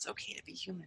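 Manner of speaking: whispered mutter under the breath. Voicing a character quietly reassuring the group: muttered under her breath. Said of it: "under her breath, she's like".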